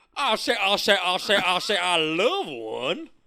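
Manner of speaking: very loud, high, belted Southern cartoon accent. Joking about doing a Southern Cajun accent, in a Foghorn Leghorn voice. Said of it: "I'm doing Foghorn Leghorn".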